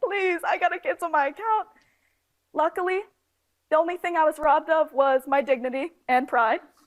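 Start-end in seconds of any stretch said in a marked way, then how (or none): 0.0-1.7 mock crying, high, tearful, pleading voice. Retelling begging at the bank to close an account: retelling a tearful plea. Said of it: "I'm crying in there".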